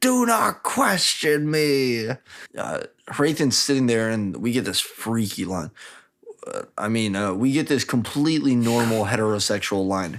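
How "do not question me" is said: acted crazed, unhinged snapping, high, very slow, drawn out. Retelling a scene where a character answers a question: imitating someone going full crazy. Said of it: "Dilloff just goes full crazy and he's like".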